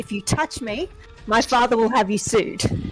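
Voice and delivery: menacing, threatening delivery. Voicing a drunk character standing on a table, threatening everyone: threatening in character. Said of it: "stand up on the table with my quarterstaff and say".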